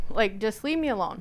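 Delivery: plain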